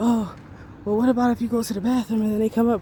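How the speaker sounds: fast, panicky, freaked-out, worried delivery.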